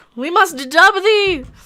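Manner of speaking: high, loud, slow mock royal proclamation voice.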